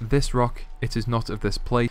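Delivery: ordinary delivery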